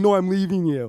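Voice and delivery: mock yelling. Telling how a woman yelled at him from her car, retelling a yell. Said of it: "yelling at him, being like".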